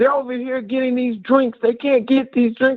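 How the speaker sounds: put-on high, irate, angry man hollering. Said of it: "this guy hollering at my kids".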